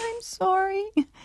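very high, pathetic little squeak.

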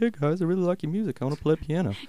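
squeaky, very high felt-puppet voice. Retelling what a newcomer said after seeing the band's acoustic show: Muppet voice. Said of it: "In a Muppet voice?".

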